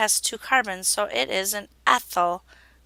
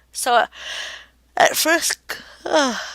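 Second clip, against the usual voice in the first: words caught mid-yawn, pitched up; 6 semitones higher, 4 dB louder than usual. Explaining chemistry chain rules while tired, yawning. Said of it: "I'm yawning".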